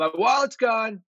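put-on very high, loud shout. Retelling what a hockey teammate yells in the dressing room: imitating someone yelling. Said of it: "he yells out".

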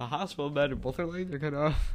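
talking through laughter. Telling a story to a listener who asks why, laughing while talking. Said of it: "Why are you laughing?".

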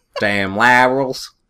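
put-on Southern accent. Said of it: "probably in southern accent way".

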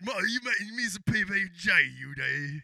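put-on cockney accent. Asked for a Cockney voice, play Jason Statham talking to his mother, Cockney Jason Statham voice. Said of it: "give me a can Cockney voice".

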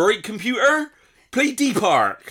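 broad Bristol accent, loud, high-pitched and slow.

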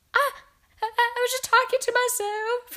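very high, drawn-out, fearful, frightened crying out. A witch, confronted by the screaming Grand High Witch, protests: frightened cry. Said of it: "cried the wretched witch".

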